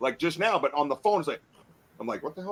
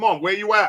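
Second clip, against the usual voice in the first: play-acted, irritated, mad, challenging tone, called out; 4 semitones higher, 7 dB louder than usual. Speaker retelling calling out toward the woods at the fence, acting out being mad. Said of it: "Like I was mad".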